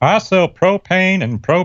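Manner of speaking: very high, deliberate, slow, drawn-out character voice. Quoting a line as a cartoon character: Hank Hill voice. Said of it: "my Hank Hill imitation".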